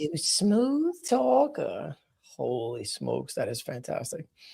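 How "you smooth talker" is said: smooth, high, slow, drawn-out voice. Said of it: "echo of the impression".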